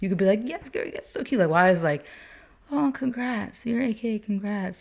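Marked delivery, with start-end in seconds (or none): 2.7-4.8 slow, condescending, high-pitched half-whisper. Retelling someone's congratulations to the speaker: mock condescending half-whisper. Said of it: "like why are you whispering?".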